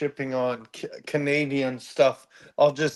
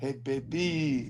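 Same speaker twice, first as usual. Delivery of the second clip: put-on French skunk voice, quieter; 7 dB quieter than usual. Imitating a cartoon skunk hitting on someone: Pepe Le Pew voice. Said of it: "Or Pepe Le Pew goes".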